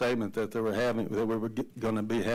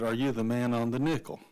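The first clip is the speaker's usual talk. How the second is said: put-on scared little boy voice. Recalling a little boy in a second grade class, imitating a scared little boy. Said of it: "in kind of a scared voice".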